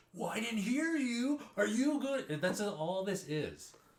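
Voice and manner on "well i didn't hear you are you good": hype motivator yelling, much higher and louder. Mocking motivational talks in front of an audience: yelling like a hype motivator. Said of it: "And I'm yelling into the microphone".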